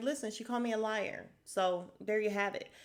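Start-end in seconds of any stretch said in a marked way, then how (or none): none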